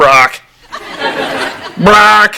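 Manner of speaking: high, squawking parrot voice. Telling a friend his new name sounds like a parrot, repeating it: parrot squawk. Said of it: "Sounds like a parrot".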